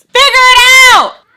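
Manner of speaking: shrill, very high, full-volume scream. Retelling what she screamed at the speaker: retelling her scream. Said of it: "She screams".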